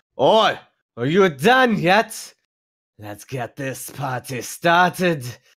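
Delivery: very slow, high, drawn-out dwarf yell. Game master voices a dwarf yelling at the players; dwarf yelling in Dwarven. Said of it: "the dwarf yells uh, in Dwarven".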